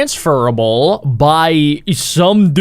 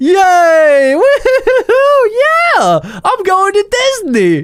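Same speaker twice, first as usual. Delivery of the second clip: higher mock gleeful cheering. Retelling how a man ran off laughing with glee: imitating gleeful joy. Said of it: "he just is like".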